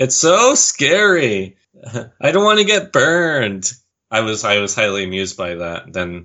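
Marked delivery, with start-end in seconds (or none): 0.0-3.7 exaggerated high, swooping whine, scary and drawn out. Recapping a race episode, imitating Courtney at the anvil task: over-the-top whiny Courtney impression. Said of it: "they get really over-the-top whiny voices there".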